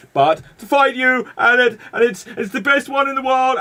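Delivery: ridiculous, shrill, very high and loud voice. Imagining a wrestling crossover announcement, the speaker does a ridiculous Tony Khan impression. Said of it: "he's just like ridiculous voice".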